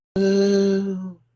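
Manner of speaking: gentle, high, drawn-out cry, no screech. Retelling a woman's call for help in the woods, imitating a very soft help. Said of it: "Very soft".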